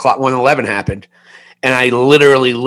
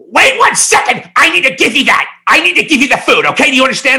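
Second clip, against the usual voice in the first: very high, aggressive, pushy, bossy voice; 13 semitones higher than usual. Retelling a pizza delivery job, imitating the restaurant owner. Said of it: "This is exactly how she sounded".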